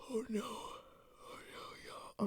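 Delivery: very slow, whispered, breathy, drawn-out words mid-yawn. Answering a question for viewers, speaking while yawning. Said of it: "I'm yawning".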